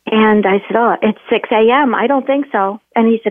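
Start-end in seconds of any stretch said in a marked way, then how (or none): none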